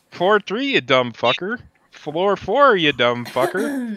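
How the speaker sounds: high, loud elevator announcer voice.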